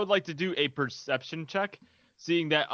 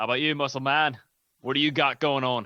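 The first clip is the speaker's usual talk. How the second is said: put-on Australian accent. A character asks the muscle man what he has going on, australian accent. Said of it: "how do you do an Australian accent?".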